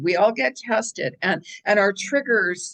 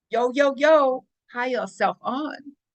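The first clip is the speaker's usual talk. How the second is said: put-on New York Brooklyn accent; 3 semitones higher than usual. Speaker riffs on having your higher self on, in a Brooklyn accent. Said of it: "I'm not going to go on the Brooklyn accent".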